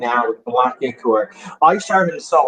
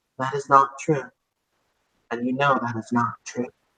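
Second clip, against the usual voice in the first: soft, very calm, unruffled voice; 5 dB quieter than usual. Retelling a game moment where a voice answers someone laughing manically, imitating a very calm voice. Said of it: "a very calm voice saying".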